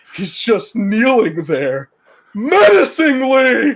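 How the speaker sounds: slow, high, loud, drawn-out sing-song goofy cartoon voice. Describing a cartoon meme, voicing the starfish's line: Patrick Star impression. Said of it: "You have a fantastic Patrick Star impression".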